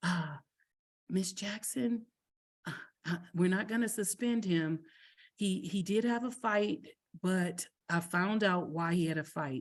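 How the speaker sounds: soft, hushed, halting, stumbling stage whisper. Retelling what the principal said quietly on arrival: imitating someone half-whispering. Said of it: "she whispers".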